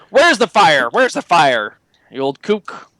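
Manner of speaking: irritable, grouchy, grumpy, cranky tone. Voicing a character who comes downstairs asking about a fire: grumpy voice. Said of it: "he sounds, like, pretty fucking grumpy".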